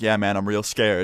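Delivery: ordinary delivery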